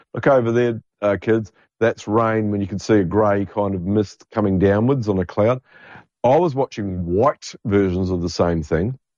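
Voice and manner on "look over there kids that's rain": plain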